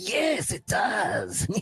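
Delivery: cackling goblin voice, very slow, gleeful relish. Game master voicing a goblin that licks its blade, cackling gleeful goblin. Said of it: "It cackles with glee and licks the blade and says".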